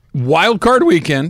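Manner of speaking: breaking, cracked voice mid-phrase. Announcing the start of wild card weekend picks: voice cracking. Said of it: "my voice cracked".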